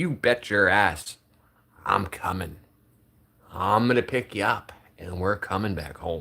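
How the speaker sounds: put-on sternest fatherly tone, firm. A father retells what he told his child: retelling in stern dad voice. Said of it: "In my sternest dad voice".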